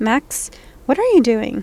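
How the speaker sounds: plain reading voice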